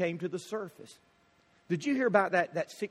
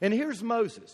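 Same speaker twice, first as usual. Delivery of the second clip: ordinary delivery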